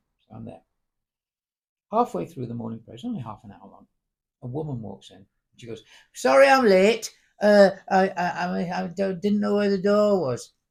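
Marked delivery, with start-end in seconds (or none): 6.2-10.5 put-on very loud, very slow, strong northern Manchester accent. Retelling a latecomer apologizing at morning prayers, in a northern Manchester accent. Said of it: "A very northern Manchester accent".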